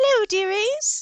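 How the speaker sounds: put-on very high, sweet little old lady voice. Game narrator voices the little old lady behind the counter, sweet little old lady voice. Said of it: "sweetest little old lady behind the counter".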